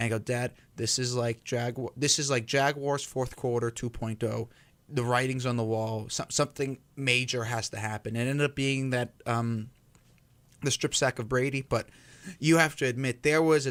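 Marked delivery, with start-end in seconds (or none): none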